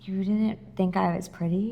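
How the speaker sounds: half-whispered, private stage whisper. Retelling how a woman turned to him in front of everyone: half-whispering. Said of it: "she whispers".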